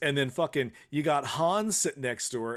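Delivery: normal talking voice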